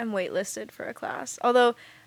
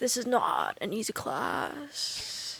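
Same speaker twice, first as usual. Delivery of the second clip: soft, swooping, snooty, self-important pretentious professor voice; 6 dB quieter than usual. Speaker retells the first thing a professor said in class, mock pretentious professor voice. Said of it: "the professor's voice, he was just like kind of a little pretentious".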